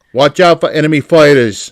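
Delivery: booming, yelled Brooklyn tough-guy voice.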